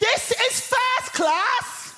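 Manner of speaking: very high, drawn-out shout at the top of the voice. On a train, a seated woman sees them enter first class: retelling a full-voice shout. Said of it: "at the top of her voice, she shouts".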